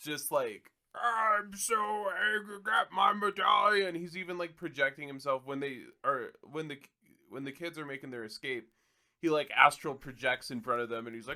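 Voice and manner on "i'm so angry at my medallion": hammy, over-the-top villain voice pitched very high. Describing a villain's scene in a movie, imitating over-the-top villain. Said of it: "it's so over the top".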